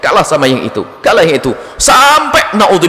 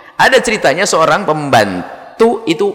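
plain

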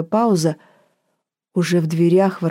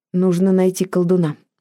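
ordinary delivery, nothing marked

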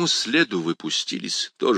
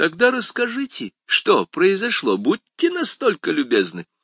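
biting mock politeness, sarcastic, high and swooping pitch; 8 semitones higher than usual. Sergeant Holcomb answers Perry Mason with a sarcastic remark. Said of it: "язвительно заметил сержант Хоулком".

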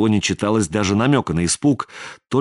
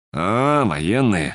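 knowing, meaningful drawl. Hearing his partner was picked by the military; drawled meaningfully. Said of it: "протянул Сизый совсем другим тоном, многозначительно так".

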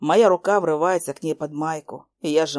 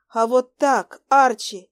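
high, slow, quavering, trembling voice; 8 semitones higher than usual. After a deep breath, [name] answers Archie's question in a trembling voice. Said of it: "дрожащим голосом".

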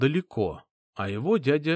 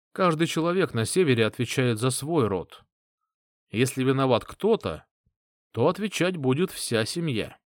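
ordinary delivery, nothing marked

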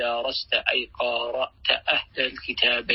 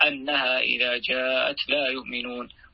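plain

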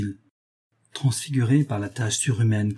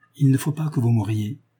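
ordinary delivery

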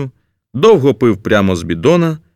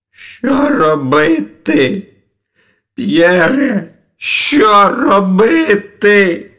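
hysterical, very high pitch, very slow, drawn out; 9 semitones higher than usual. A character in hysterics asks another what to do; hysterical. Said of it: "бився у істериці".

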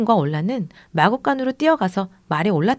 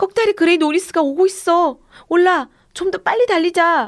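very high, shrill yelled call; 10 semitones higher, 3 dB louder than usual. Fleeing on horseback, a rider looks back and calls to a companion: shouting. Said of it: "브랜든이 외치자".

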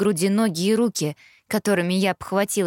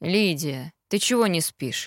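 sleepy, drowsy, lower and slower; 3 semitones lower than usual. A father, just woken, speaks to his daughter; sleepy. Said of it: "сонно почесывая голову".

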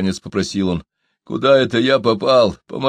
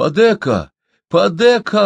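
joyful, glad, pitched-up, happy voice; 9 semitones higher, 4 dB louder than usual. A man in a pit sees his father's old friend, joyful. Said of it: "обрадовался Чумбока".

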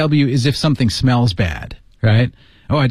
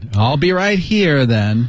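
play-acted grudging, displeased, fast, reluctant tone. Repeating a teacher's line to show his tone: imitating an unhappy, reluctant tone. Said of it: "他不怎么开心".

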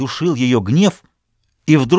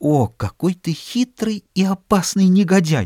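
trembling whisper, much higher pitch; 6 semitones higher than usual. A woman answers the man who is divorcing to remarry, whispered, trembling all over. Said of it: "Она прошептала, вся дрожа".

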